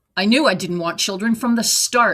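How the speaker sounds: ordinary delivery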